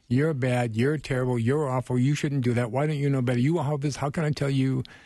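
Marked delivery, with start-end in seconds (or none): 0.1-3.9 harsh, hostile, attacking and accusing tirade. Showing how speaking up sounds when attacking someone: harsh, attacking tone. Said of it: "speaking up in that harsh way".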